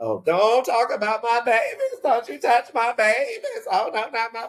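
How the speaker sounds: very high, loud, drawn-out Georgia church lady voice. Speaker mimics people who defend their babies: georgia church woman voice. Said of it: "sound like a woman from a church in Georgia".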